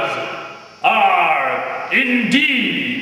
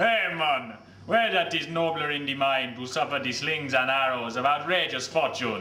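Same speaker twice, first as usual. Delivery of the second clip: put-on Jamaican accent, stage delivery; 5 semitones lower, 9 dB quieter than usual. Recalling the first time the play was performed this way, in a jamaican accent. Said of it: "first time it had ever been played in a Jamaican accent".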